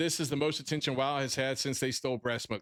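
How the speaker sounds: plain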